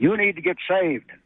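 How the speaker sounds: furious, high-pitched screaming. Retelling what a furious pastor screamed at him on the phone: imitating someone screaming. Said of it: "he finally wound up screaming at me".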